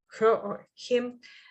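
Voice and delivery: ordinary talk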